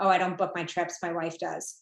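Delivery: acted dry, level, flat deadpan monotone. Retelling a research participant's answer about booking trips: imitating a deadpan reply. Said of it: "deadpan was like".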